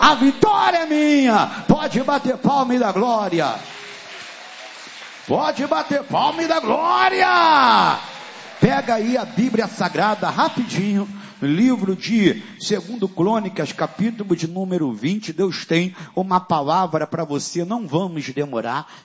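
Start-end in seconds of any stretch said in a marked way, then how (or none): 0.0-8.0 proclaiming shout. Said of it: "levanta a mão e diga".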